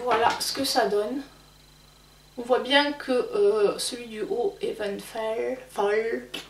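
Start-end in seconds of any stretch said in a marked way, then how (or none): 4.6-6.3 soft, bad English accent. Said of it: "super mon accent anglais".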